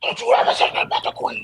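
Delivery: hoarse, rushed, voiceless growl straining to shout. Retell how a man who lost his voice jumped in your face, imitating a growling, voiceless yell. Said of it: "He was like he was growling".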